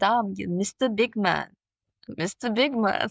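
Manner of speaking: put-on very slow, drawn-out Caribbean island accent. Retelling what a woman said to an aggressive ticket taker, in her accent. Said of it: "the woman said in her accent".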